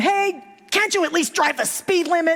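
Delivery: acted-out, very high-pitched, fed-up yell. Retelling a video where one driver yells at a slow driver: imitating someone yelling. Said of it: "the guy in the red car is yelling at him".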